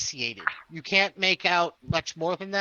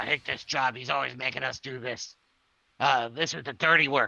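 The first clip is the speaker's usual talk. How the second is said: low, disgruntled, complaining goblin voice; 4 semitones lower than usual. Game narrator voicing a goblin overheard in a passageway, in goblin voice. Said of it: "you hear goblin voices talking about".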